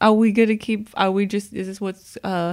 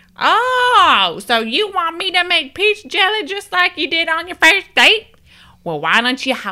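very high, loud put-on woman's voice; 10 semitones higher, 5 dB louder than usual. Telling a story, the speaker does an impression of Maggie: Maggie impression. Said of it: "This is my impression of Maggie".

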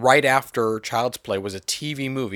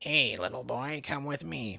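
put-on barely audible, very hushed old woman's voice; 3 semitones higher, 9 dB quieter than usual. Recounting a movie opening where an unseen old woman abducts a boy: old woman voice. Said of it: "You just hear an old woman like being like".

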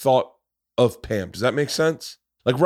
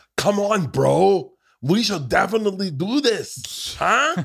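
put-on caricature of nineties English, higher; 8 semitones higher than usual. Mocking how an actor plays Tommy, imitating Sebastian Stan as Tommy. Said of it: "he's like".

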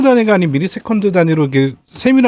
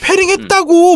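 put-on furious, insistent tone, pitched very high; 11 semitones higher than usual. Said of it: "막 이러는 거 다들".

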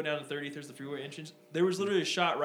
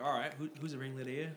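put-on Australian accent, much quieter; 3 semitones lower, 6 dB quieter than usual. Retelling what a man said, in an Australian accent impression. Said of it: "that was a pretty decent uh, impression".

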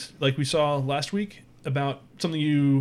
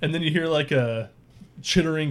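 usual speaking voice

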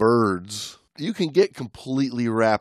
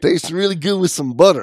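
loud, high, fake put-on Cajun accent; 8 semitones higher, 7 dB louder than usual. Repeating a line after praise for the accent: put-on Cajun accent. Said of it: "you've been working on your Cajun".

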